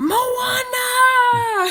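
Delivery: put-on very high, very loud, drawn-out toddler battle cry. Retelling how a two-year-old yelled in the car: imitating Riley yelling. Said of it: "Riley, our two-year-old, yells".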